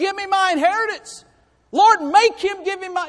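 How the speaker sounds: put-on loud, high, insistent toddler voice. Retelling a young man demanding his inheritance, sounding like a little two-year-old. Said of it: "Doesn't he sound like a little two-year-old?".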